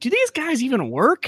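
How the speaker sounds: disbelieving inner voice. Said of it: "I'm like".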